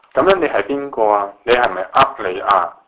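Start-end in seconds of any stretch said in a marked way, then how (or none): none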